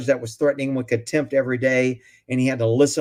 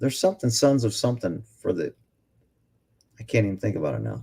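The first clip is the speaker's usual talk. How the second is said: tired, weary, much lower and quieter; 5 semitones lower, 4 dB quieter than usual. Speaker loses his train of thought and admits he's really tired, tired voice. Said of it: "I'm really tired, but you can hear it in my voice".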